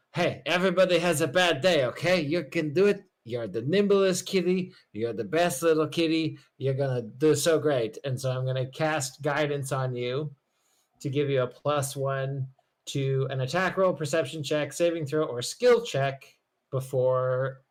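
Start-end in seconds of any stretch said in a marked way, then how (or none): 0.1-7.9 loud, encouraging, cheering shout. Playing a character who shouts encouragement up to a roof: shouting up encouragingly. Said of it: "sorta shout up to the roof".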